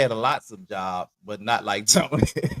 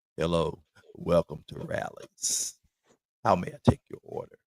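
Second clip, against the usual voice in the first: put-on sexy, breathy, sultry voice; 7 semitones lower, 6 dB quieter than usual. Retelling working as a cashier on the mic: imitating his own sexy cashier voice. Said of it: "I was talking all sexy on the mic".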